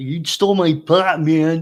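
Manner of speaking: loud put-on dog voice. Voicing the dog's answers in a Tommy Chong voice. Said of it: "Bruno sounds like Tommy Chong".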